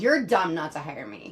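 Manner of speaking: attitudey, bitchy tone. Speaker demonstrating how it would sound if they said it to get hired: bitchy, attitudey Karen voice. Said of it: "I sound like a bitchy, attitudey Karen if I did it".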